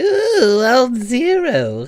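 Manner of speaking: very high, loud theatrical villain voice, "zero" drawn out. Remembering that Ziro the Hutt hired him: Ziro the Hutt impression. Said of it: "that was such a scary good impression".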